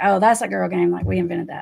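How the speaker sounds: put-on sassy voice. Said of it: "which was kinda sassy".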